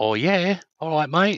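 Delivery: typical Aussie way of talking. Discussing accents with others, showing how Australians talk, Australian accent. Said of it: "Australians sort of go".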